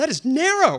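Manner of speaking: very high, emphatic, with full enthusiasm. Teaching EKG reading, the instructor models how students should answer: with gusto. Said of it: "You can say it with gusto".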